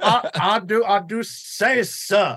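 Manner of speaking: blustering southern drawl. Describing the southern-gentleman raccoon he played, the speaker does a Foghorn Leghorn voice. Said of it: "Like Foghorn Leghorn is what you're doing".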